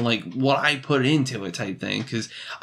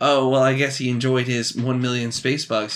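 ordinary delivery

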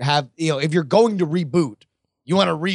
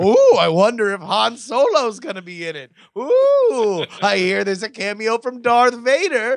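fake giddy gush, high and swooping; 7 semitones higher, 3 dB louder than usual. Mocking himself reading rumors about a new prequel: mock excited sucker. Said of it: "And here I am like a sucker".

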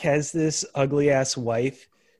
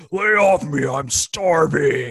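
affected, put-on manly voice; 4 dB louder than usual. Describing a woman's SNL-style bit speaking as a man, Chris Farley-type man's voice. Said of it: "she's speaking in a man's voice".

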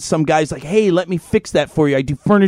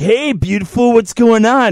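put-on catcalling voice, much higher; 6 semitones higher than usual. Retelling how a man approached a woman; imitating a catcalling man. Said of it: "sexual harassment cowboy".

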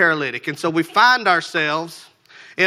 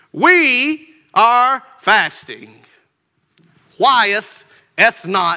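loud, slow, mock-condescending tone; 4 semitones higher, 5 dB louder than usual. Acting out people asking Jesus why his disciples don't fast: mock-condescending tone. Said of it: "their tone is kind of condescending".

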